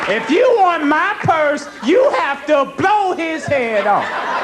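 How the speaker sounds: mock high, slow, yelled taunting voice.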